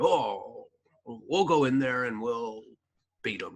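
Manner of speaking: slow, drawn-out, put-on pirate voice. Retelling what a hired lawyer said: imitating a lawyer in a pirate voice. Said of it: "I don't know why I'm doing that".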